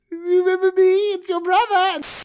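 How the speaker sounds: very high, loud, goofy, reassuring voice.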